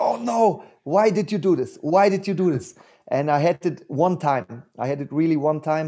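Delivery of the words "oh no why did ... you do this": cried out as a mild, restrained scream. An athlete describes jogging rounds in the forest, retelling a scream. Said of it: "I'm just screaming like".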